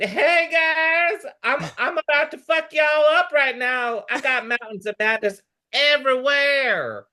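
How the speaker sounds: very high, campy Southern monster voice, "guys" stretched out.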